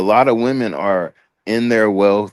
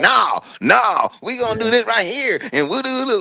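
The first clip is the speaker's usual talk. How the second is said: shrill, very high yelling. Retelling an argument in a store parking lot: imitating a woman yelling. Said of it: "she wanna yell and shit and make a fucking scene".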